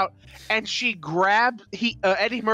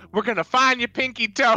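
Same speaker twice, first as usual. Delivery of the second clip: yelling, higher pitch; 4 semitones higher than usual. Retelling a movie scene line by line: Richard Pryor yelling. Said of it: "Richard Pryor's just yell, yells".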